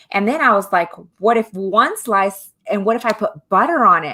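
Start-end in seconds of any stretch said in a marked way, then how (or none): none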